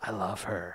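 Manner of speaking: soft, dazed, half-conscious murmur. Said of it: "in a daze".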